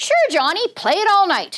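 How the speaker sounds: dripping sarcasm. Showing how a frustrated parent answers a child: acting out a sarcastic reply. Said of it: "That sarcasm is coming from".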